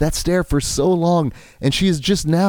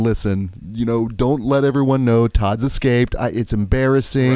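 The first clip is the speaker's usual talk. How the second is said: ordinary delivery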